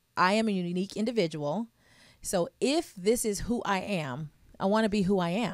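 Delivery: ordinary talk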